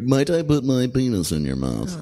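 put-on, laid-on bedroom sex voice. Showing how the speaker asks during sex, in the speaker's sex voice. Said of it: "That's my sex voice".

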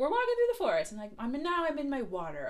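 excited, high, loud narration voice.

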